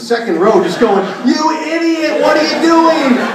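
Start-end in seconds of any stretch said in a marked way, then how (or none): 1.3-3.2 very high-pitched shrieking, screaming voice. Retelling stadium fans yelling at a team executive: imitating fans screaming. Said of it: "just screaming at Ted".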